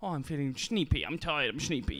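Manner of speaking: put-on sleepy, cutesy baby voice. Speaker shows what partners say in a relationship: baby voice. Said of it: "the words you say in the baby voice".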